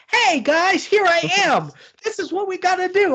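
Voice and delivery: very high, cartoonish villain voice. Complaining about a film's bad guy reveal, the speaker imitates Kevin Bacon's cartoonish villain voice. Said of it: "Why did he speak like a cartoon?".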